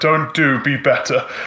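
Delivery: angry put-on character voice. Asked if cheering her on, answering in character as angry Kratos. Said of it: "I'm just very much kind of angry".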